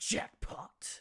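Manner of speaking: deep, low, breathy smoldering voice. Trying a Dante impression after hitting a jackpot, in a deep smoldering Dante voice. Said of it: "way too deep ... deep, smoldering Dante voice".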